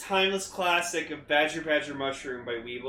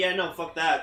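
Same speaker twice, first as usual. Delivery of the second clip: ordinary talk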